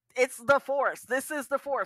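high, loud proclaiming delivery. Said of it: "and was like".

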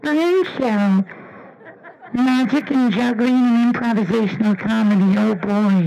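cute, small, high little puppet voice. Demonstrating announcing his show in different voices, in a cute little Muppet voice. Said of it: "kind of like a cute little Muppet voice".

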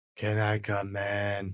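creepy, eerie, flat monotone. Showing how these children ask to be let in, in a creepy monotone. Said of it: "it's usually done in a monotone".

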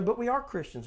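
ordinary delivery

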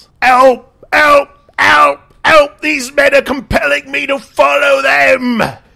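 very high, very loud, shrill, rasping rough yelling. A captain struggling against his captors gets his voice back: yelling for help. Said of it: "And he yells".

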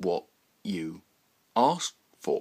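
slow, deliberate, every consonant hit. A man repeats his words to Roy: slow, accentuating each consonant. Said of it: "repeated the man, slowly, accentuating each consonant".

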